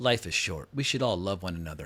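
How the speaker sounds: low, total, dripping sarcasm. Recapping a TV episode, quoting a character's remark at a funeral, retelling it with utter sarcasm. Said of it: "with like just complete and total utter sarcasm".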